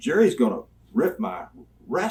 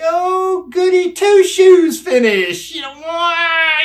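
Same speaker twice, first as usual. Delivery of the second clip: very high, loud drawl with long, stretched why; 11 dB louder than usual. Retelling what Jim Barnett said about the finish: Jim Barnett impression. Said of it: "it's the way he talked".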